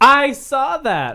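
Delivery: abrupt, sudden shout, very high-pitched. Answering a question about who is leaving American Idol: yelling. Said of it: "Why are you yelling?".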